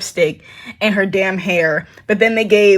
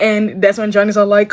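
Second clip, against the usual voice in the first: plain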